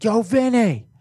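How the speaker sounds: shrill, high, very loud, far-carrying scream. Telling a story, the speaker imitates a guy screaming at his buddy. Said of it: "he's screaming at his buddy".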